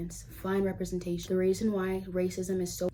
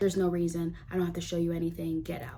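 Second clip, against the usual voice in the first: normal talking voice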